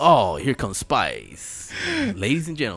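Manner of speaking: swooping, hyped-up strip-club DJ announcer voice. Showing how the strip club DJ announces dancers: imitating the strip club DJ. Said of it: "lip singing what he's saying".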